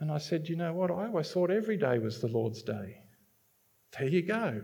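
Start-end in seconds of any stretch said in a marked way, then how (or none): 0.5-3.0 mock sarcastic, swooping sing-song delivery. Retelling own reply to a couple who complained: retelling own sarcastic reply. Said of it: "I was being sarcastic".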